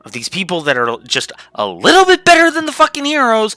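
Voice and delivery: heated, very high-pitched worked-up rant, rising. Speaker apologizes for getting worked up, then keeps going, worked up ranting. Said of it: "I'm sorry for getting so worked up".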